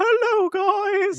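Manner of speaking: very high-pitched cartoon-character voice. Imitating Pops from Regular Show: Pops voice. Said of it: "He's all like".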